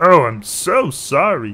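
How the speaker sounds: play-acted sarcastic "sorry", very slow. Repeating a game character's apology the way he said it: imitating a sarcastic apology. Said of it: "He said it a little more sarcastically".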